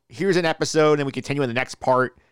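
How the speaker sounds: ordinary talk, nothing marked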